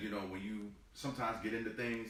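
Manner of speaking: usual speaking voice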